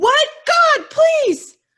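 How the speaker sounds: shrill, frantic, very high, very loud screaming. Acting out a woman begging for help while her friend is being killed, imitating a woman screaming. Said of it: "So she's screaming in the".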